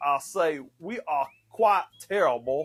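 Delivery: laid-on fake Southern accent. Told they have to do the accent, playing the LSU coach, Brian Kelly fake Southern accent. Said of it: "you gotta do the accent".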